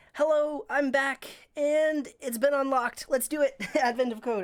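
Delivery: breathless, panting voice. Back at the stream after running downstairs, starting out of breath. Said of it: "I'm out of breath".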